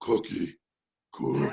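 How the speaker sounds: very deep, low, furry-monster voice. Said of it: "I sound like the Cookie Monster".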